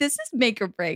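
plain

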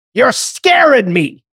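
high-pitched yelling in a complaining tone. Retelling what an angry woman on a train yelled: imitating a woman yelling.

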